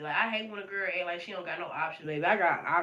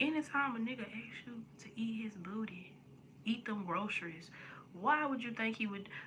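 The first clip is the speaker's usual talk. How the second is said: soft, hushed whisper under the breath; 4 semitones higher, 8 dB quieter than usual. Telling a story about a girl, the speaker drops to a whisper. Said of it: "I gotta whisper this".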